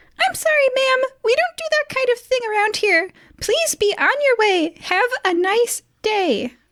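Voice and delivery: very high-pitched, pushed-up character voice. Game master voicing Nulisag to the players, high-pitched Nulisag voice. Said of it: "In a high-pitched voice, Nulisag says".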